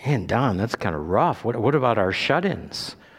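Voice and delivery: ordinary talk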